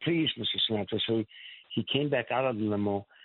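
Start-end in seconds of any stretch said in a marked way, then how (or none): none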